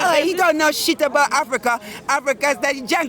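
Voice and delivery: ordinary talk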